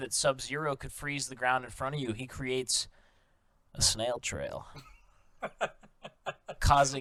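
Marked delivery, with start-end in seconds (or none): 2.1-4.7 late-night radio host voice, much slower. A speaker explains a theory to others; like a late-night radio host. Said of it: "You said it like a late night".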